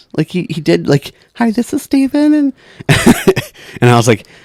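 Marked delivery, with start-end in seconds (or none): 1.4-2.3 fake very high female phone voice. Retelling how a man mimicked answering the phone, in a put-on woman's voice. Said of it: "he put on like it was like a woman's voice".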